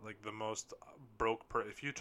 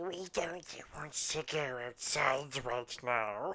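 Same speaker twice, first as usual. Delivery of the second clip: creeping, very slow, drawn-out creature voice; 4 semitones higher, 3 dB louder than usual. Joking about leaving a basement into the sun: Smeagol voice. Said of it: "like, Smeagol, like".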